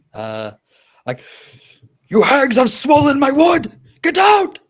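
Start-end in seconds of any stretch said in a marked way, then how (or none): 2.1-4.4 very high, very loud, rising shrieking shout. A player's character yells at hags during a charisma save, yelling. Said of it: "I'm just yelling in Elvish".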